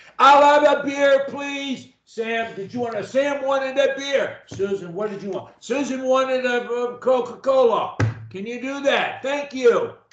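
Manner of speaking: loud, very high voice. Showing how to order drinks in a noisy bar: talking louder. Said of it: "one of the easiest ways to talk in a bar is to talk louder".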